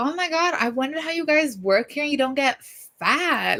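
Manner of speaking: grating, irritating, high-pitched voice. Retelling a woman's comment while packing her box, imitating a grating voice. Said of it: "like this grating voice".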